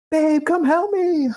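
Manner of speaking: very high, mock frantic, panicked yell. Retelling a bike fire, calling a wife for help: imitating own yell. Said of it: "I'm yelling".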